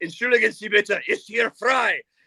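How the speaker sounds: German made harsh and menacing-sounding. Showing how an ordinary German phrase sounds, in scary-sounding German. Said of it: "because it's in German, it sounds scary".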